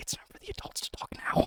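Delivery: hushed, breathy whisper, barely voiced. Narrator voicing a man walking over to another character, very quiet. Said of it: "very quietly saying".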